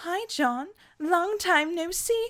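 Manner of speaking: put-on extra strong, very British accent. Speaker voices a little green friend greeting the listener, Calliope with British accent. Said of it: "British accent, British accent, British, more British".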